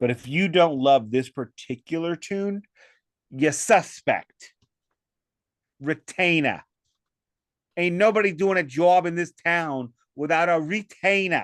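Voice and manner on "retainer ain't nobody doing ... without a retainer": sketchy fake Boston accent, pitched up. Performing a line for an audience in a put-on boston accent. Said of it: "[name]'s Boston accent".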